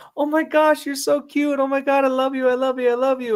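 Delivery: very high, happy, gushing sing-along talk voice. Showing how you greet a dog, happy voice to a dog. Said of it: "because you did the happy voice".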